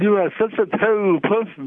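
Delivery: tongue stuck out. Demonstrating how to say anything to someone, spoken with tongue stuck out. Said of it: "if I put my tongue out of my mouth and say".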